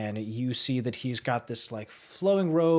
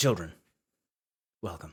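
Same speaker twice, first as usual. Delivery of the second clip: low, welcoming priest voice; 6 semitones lower than usual. Voicing a deep gnome priest greeting the players: voicing the deep gnome priest. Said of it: "he turns around, and he's just like".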